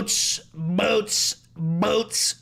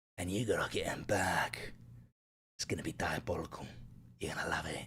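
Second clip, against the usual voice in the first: put-on rough Cockney voice, lower and quieter; 15 dB quieter than usual. Doing a requested impression, addressing Huey: Billy Butcher voice. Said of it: "Do Billy Butcher".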